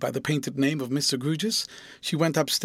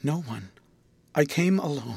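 plain

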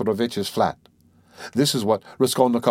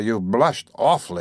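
plain reading voice

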